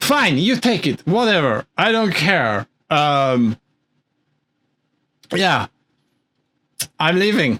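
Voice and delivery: put-on drunken speech. Voicing a character who hands something over and leaves: acting drunk. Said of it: "are you drunk?".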